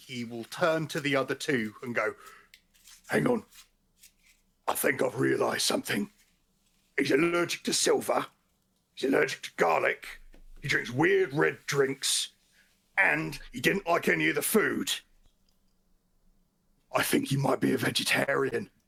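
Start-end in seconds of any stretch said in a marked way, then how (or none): 3.1-18.7 worst imaginable, very obvious stage whisper. Player as Gander turns to the other two about a companion, Gander's terrible stage whisper. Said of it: "in like the worst stage whisper imaginably".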